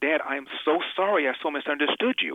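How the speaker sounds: tearful, teary voice while speaking. Retelling what they said to their dad, retelling a tearful apology. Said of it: "Now I'm crying".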